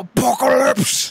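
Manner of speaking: exaggerated spitty shout with gusto. Imitating how Cable's cartoon voice said the word: Cable "apocalypse" with spitty gusto. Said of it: "always said apocalypse with so much gusto and mouth spit".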